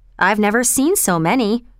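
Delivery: plain reading voice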